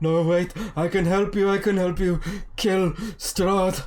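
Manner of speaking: very loud, high, frantic, panicked pleading outburst. Voicing a captive who starts panicking and begs to help: panicking. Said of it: "starts panicking".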